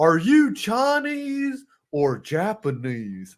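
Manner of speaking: very slow, drawn-out, swooping cartoon voice with pitch swings. Doing a Hank Hill impression of a line: Hank Hill impression. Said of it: "Hank Hill impression from [name]".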